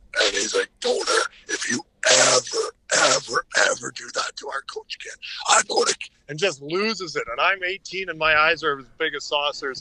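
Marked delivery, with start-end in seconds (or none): 0.2-6.1 rasping, raspy, strained throat voice. Retelling how a team leader pinned him to the wall: imitating Manso's raspy throat-hit voice. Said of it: "So he talks like this".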